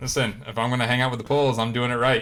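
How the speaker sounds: ordinary talk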